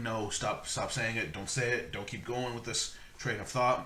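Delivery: ordinary delivery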